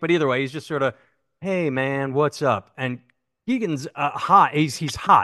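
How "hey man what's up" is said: mellow, slow, laid-back stoner voice, acted. Acting out a sketch's relaxed texter: imitating Jordan relaxed. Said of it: "Jordan is sort of relaxed".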